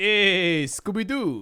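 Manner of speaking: put-on brash comic voice. Asked for Dice Man, doing an Andrew Dice Clay impression. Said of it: "Give me some Dice Man".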